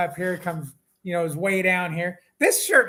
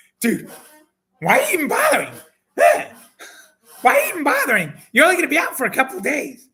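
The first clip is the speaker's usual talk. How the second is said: loud, swooping, worked-up put-on excited voice; 9 semitones higher, 6 dB louder than usual. Retelling what Jeremy told him one morning, in his excited Jeremy voice. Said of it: "That's my excited Jeremy voice".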